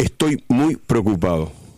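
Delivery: slow, grave, solemn announcer-style delivery.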